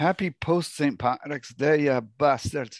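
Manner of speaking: put-on Scottish accent. Greeting the others after St. Patrick's Day, in a put-on Scottish accent. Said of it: "Why did I go Scottish?".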